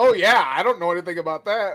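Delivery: mock very loud, high, heavy-handed overly sarcastic tone. Retelling a movie scene with Seth Green as a mechanic, imitating Seth Green, overly sarcastic. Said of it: "Overly sarcastic".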